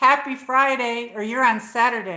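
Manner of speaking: very loud, booming, bellowing yell. Streamer greeting a viewer who stumbled onto the stream, yelling. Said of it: "I don't know why I'm yelling".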